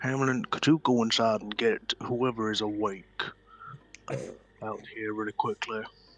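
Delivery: hushed, quiet stage whisper. Voicing a character who quietly asks a companion to fetch others: half-whispering in character. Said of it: "he's whispering".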